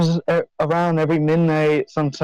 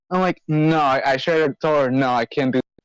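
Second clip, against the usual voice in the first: plain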